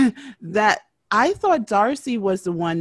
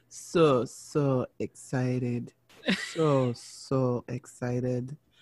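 very slow, flat, indifferent deadpan monotone; 5 semitones lower, 7 dB quieter than usual. Talking about the Silva twins, says it in a put-on flat, indifferent Z-Ed voice. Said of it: "I had to put on the Z-Ed voice because that's exactly how I feel. I'm very indifferent".

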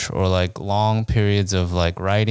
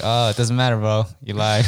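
ordinary talk, nothing marked

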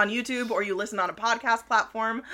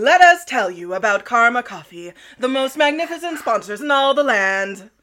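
put-on raised, grand, old-timey show-tune flourish; 7 dB louder than usual. Giving a shout-out to a sponsor, Karma Coffee, in an old-timey voice. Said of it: "I almost popped into like an old-timey like".

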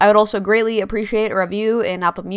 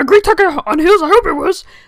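very high, loud, small, alien-like voice; 9 semitones higher, 5 dB louder than usual. Closing a podcast episode, repeat your own remark to the listeners as a Yoda impression. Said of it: "That was my good Yoda impression".

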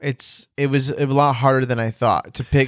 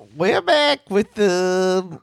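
goofy, high put-on voice, the stretched out; 7 semitones higher than usual. Opening a podcast episode with a co-host, in a stupid put-on voice. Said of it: "That's a stupid voice".

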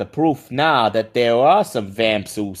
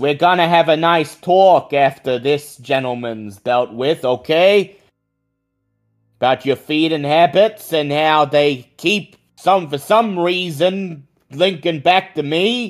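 raised, louder voice, pitched up; 6 semitones higher than usual. Playing Tommy in a role-play scene, addressing another character: raised voice. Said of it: "Tommy raises his voice".

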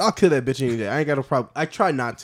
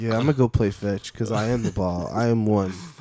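put-on stoned golden retriever voice; 6 semitones lower, 4 dB quieter than usual. Joking that golden retrievers are the stoners of dogs, voicing one: stoned golden retriever voice. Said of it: "golden retrievers are the stoners of dogs".

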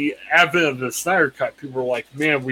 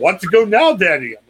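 put-on little kid voice, loud, eager, excited; 4 semitones higher, 5 dB louder than usual. A father retells his daughter yelling at him during a show, retelling a child's yell. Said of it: "she was yelling".

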